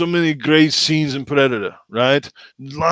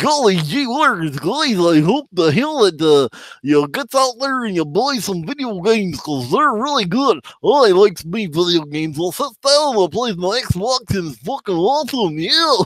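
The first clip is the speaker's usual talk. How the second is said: silly, goofy cartoon voice, pitched high; 5 semitones higher than usual. Offering listeners an impression after a joke about Minnie: a Goofy impression. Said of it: "I can do a pretty good goofy impression".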